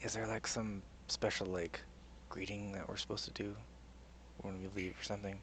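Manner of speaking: very quiet, hushed, leaned-in whisper. Leaning over to ask a companion something quietly: whispering in character. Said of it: "lean over to Bernie and whisper".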